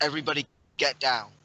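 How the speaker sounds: full-voiced, loud, booming alarm shout. Ducking under a table, shouting for the other nobles: shouting a warning. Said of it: "just shout for the other nobles".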